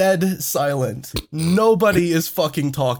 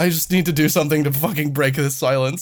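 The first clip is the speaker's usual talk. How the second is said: plain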